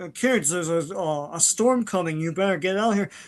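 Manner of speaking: halting, hesitant public-service announcement delivery. Quoting a character warning kids in a lake: imitating Deep Six. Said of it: "He's like".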